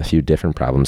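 ordinary talk

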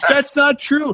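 high-pitched, defensive voice. Retelling an argument with Dad about a game, imitating Dad getting defensive. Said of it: "He like got all defensive".

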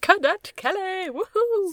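very high, squealing, excited whoop. Retelling the other speaker's reaction after last night's watch along: imitating the other's excited cheer. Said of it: "you're like".

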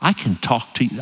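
speaking very softly. Showing the congregation how the microphone carries a voice: speaking very softly. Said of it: "I don't even converse this softly".

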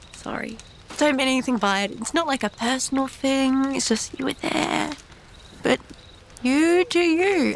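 quiet, unembarrassed stage whisper. A player's character sneaks outside at night to the statue, in a hushed tone. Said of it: "in hushed tone".

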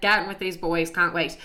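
plain

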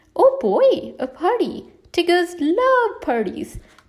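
gleeful, excited, drawn-out, swooping outcry. Tigger replies to Pooh and his friends, crying out excitedly. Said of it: "Tigger cried excitedly".

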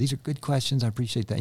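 put-on fast, rattled-off, thick German accent. Quoting Horst Schultze's reply to guest services questions, in his thick German accent. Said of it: "in his thick German accent".

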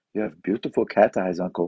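put-on Indian English accent. A speaker retells what orphans in India told him, in a put-on Indian accent. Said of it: "Is that a good accent?".

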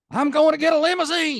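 very loud, shrill, swooping Louisiana drawl holler. Retelling a former commentator shouting outside at somebody, imitating a yell in Louisiana drawl. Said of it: "yelling at the top of his lungs in his Jodine, Louisiana drawl".

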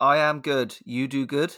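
slightly robot-like, flat monotone delivery. A podcast co-host answers the host's greeting in a slightly robotic voice. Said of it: "You sound slightly more robotic than usual".

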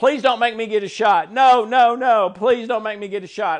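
put-on yelling, desperate, screaming child-like voice. Recalling getting a shot as a child, retelling screaming to mom. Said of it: "I just started screaming to my mom".

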